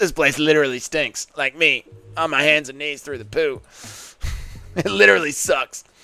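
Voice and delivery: put-on, caricatured, grimy sewer-creature voice. Answering a chat request to do an impression of Bilal in the sewers. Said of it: "Can you do an impression of Bilal calling for the sewers and being extremely stinky".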